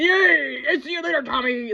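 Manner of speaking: very high, bad fake Irish brogue, yay stretched. Recapping an episode's awful accents, imitating Parker's fake Irish brogue. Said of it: "Like she's faking an Irish brogue".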